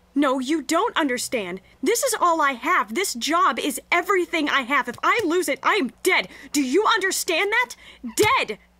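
loud, high, raging cavewoman-style outburst. A woman panics after being told to calm down: angry cavewoman outburst. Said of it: "Xenia kind of turned into an angry cavewoman".

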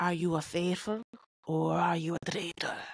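put-on Edinburgh-style Scottish accent. Speaker attempts the accent a friend picked up in Edinburgh, Scottish accent. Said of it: "That's better".

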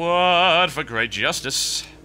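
slow, ironic, mock-grand heroic battle-cry delivery. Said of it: "I say that because it's ironic".

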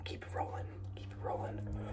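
whispered, ASMR style.

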